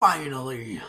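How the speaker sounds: guttural roaring bellow. A game master voices a figure in a ruined castle's throne room, guttural roar. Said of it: "in a guttural roar".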